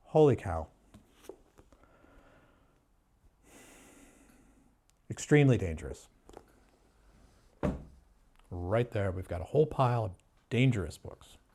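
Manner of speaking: low, sarcastic, falsely grave pretend alarm. Pretending to call a pile of books dangerous: put-on sarcastic tone. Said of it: "I'm being sarcastic here".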